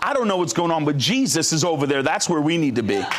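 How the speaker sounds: plain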